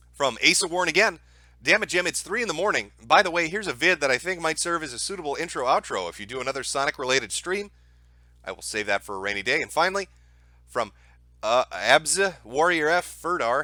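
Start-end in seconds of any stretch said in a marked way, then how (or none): none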